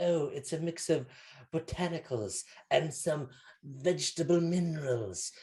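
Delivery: put-on witchy voice. Telling a story, the speaker voices the woman explaining the drink in a stereotypical witchy voice. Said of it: "stereotypical witchy voice".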